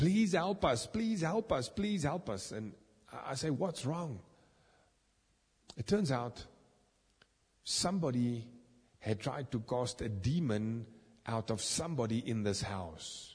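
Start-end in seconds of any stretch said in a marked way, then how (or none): 0.0-2.5 play-acted high, desperate, panicked pleading. Retelling a commotion heard in a house, imitating a panicked plea. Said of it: "I hear this panicked voice".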